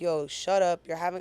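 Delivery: plain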